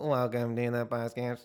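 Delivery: robotic voice. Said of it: "We talk like robots".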